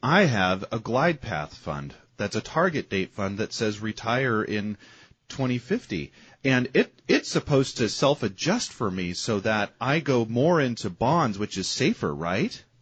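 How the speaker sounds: loud, mock-innocent sarcasm.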